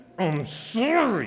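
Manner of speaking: through clenched teeth. Retelling how someone apologized, imitating a clenched-jaw apology. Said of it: "Jaw clenched, teeth never open".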